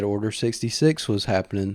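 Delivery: plain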